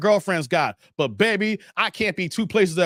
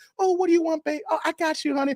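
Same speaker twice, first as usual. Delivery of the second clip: very high, sweet, doting, submissive voice; 9 semitones higher than usual. Imitating an imagined new girlfriend: imitating a submissive woman. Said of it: "she gonna be submissive too".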